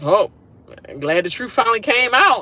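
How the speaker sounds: mockingly glad, dry sarcastic tone. Retelling a reply after the showmance was outed: imitating a sarcastic reply. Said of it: "he's being sarcastic".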